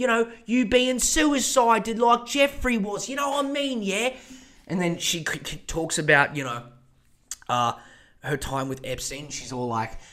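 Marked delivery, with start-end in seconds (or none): 0.0-4.1 put-on lady voice, higher pitched. Imagining her hosting a masterclass from a jail cell: Ghislaine Maxwell impression. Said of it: "She'd come out, she'd be".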